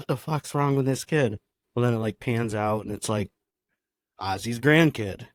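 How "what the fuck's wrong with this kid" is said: plain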